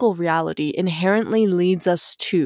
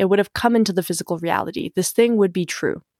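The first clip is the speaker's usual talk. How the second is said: plain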